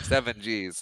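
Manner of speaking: normal talking voice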